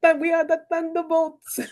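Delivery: put-on Russian-accented voice, pitched high. Recalling a running gag about a team name, the speaker quotes him imitating a russian accent. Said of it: "and his Russian accent".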